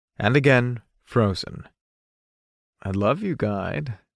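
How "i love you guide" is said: soft, teasing, playful tone. Saying it first to someone who forbade saying it, teasing. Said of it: "I teased".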